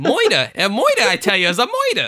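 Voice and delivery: high, loud, swooping, goofy cartoon voice. A podcast host, talking about a murder case, slips into a Roger Rabbit voice. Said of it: "Roger Rabbit made a cameo here".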